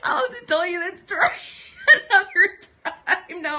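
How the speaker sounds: very high, loud speech breaking into laughter. Trying to tell a funny classroom story: laughing while talking. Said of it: "but I can't stop laughing".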